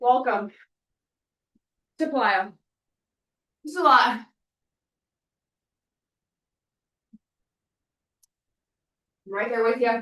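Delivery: out of breath, struggling to catch breath. Leading a workout, encouraging those following along, out of breath. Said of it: "struggling to catch my breath".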